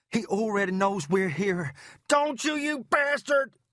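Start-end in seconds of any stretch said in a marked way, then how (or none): 2.0-3.4 full, high, rising bellow. A man shakes off his companion in a foyer and bellows a challenge, bellowing. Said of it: "He bellowed".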